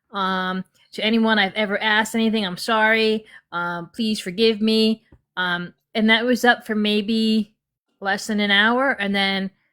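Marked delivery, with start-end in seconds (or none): 0.1-5.0 put-on crying, mock tearful voice. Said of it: "she had the waterworks coming".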